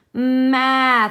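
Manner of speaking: slow, drawn-out sounds. Demonstrating how to blend a word's sounds, slow and stretchy sounds. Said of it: "my voice does not turn off in between".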